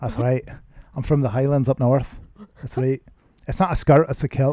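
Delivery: loud, put-on Scottish accent. Answering a question about a favourite voice to do: put-on Scottish accent. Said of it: "I like to do the Scottish one".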